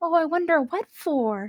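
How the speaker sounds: barely audible, very soft, hushed half-whisper. A player voicing the character Flux in a role-play scene, half-whispering. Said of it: "and she whispers".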